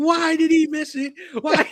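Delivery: put-on very high, slow, tearful sobbing wail. Retelling how a friend reacted to a missed kick: imitating someone crying. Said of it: "he started crying".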